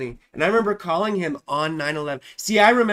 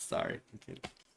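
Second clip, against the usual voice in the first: ordinary talk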